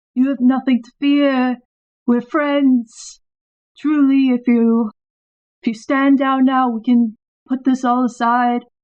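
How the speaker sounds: gentle, coaxing, persuasive tone. A player speaking in character, persuading a troll to stand down, very soft tone. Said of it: "in a very like soft tone".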